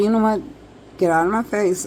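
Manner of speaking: normal talking voice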